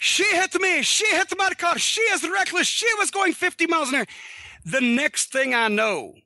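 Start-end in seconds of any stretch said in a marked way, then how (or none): 0.0-4.1 high, mock screaming rant in a man's voice. Recounting a car collision, the speaker imitates the other driver: imitating a man screaming. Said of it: "When he starts screaming".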